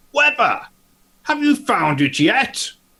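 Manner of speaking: very high, loud calling out. Coming down the stairs, Willard calls to Weber in a loud voice. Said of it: "Willard's going to say in a loud voice".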